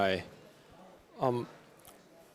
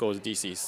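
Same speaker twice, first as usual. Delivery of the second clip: ordinary talk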